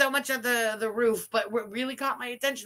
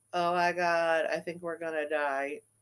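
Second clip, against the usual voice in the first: slow, sarcastic, insincere, unconvincing fake panic; 7 semitones lower than usual. Mocking a clip's line as insincere: mocking insincere panic. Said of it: "that sounded really sincere".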